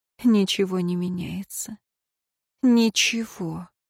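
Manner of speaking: in a whisper. A prisoner, alone, talks to herself, whispering. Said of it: "шептала женщина".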